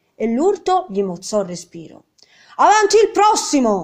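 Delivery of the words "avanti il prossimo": very high, shrill, loud squawking cry. Narrator voicing the baker woman, calling for the next one, squawking. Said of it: "Sguaì la fornaia".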